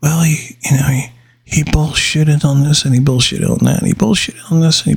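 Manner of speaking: hushed whisper. Speaker lets the listener in on a little something, whispering. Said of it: "let me whisper".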